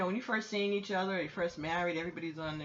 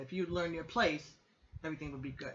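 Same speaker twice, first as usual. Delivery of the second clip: ordinary talk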